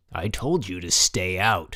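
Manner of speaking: rough, harsh, agitated, excited, deliberate voice. A man grabbing the narrator's horse's bridle, warning him off, in a harsh, excited voice. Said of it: "he said in a harsh, excited voice".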